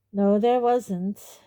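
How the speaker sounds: weary, uninterested tone. Reading a novel aloud, the teacher answers a student's question: Snape's bored voice. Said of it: "said Snape in a bored voice".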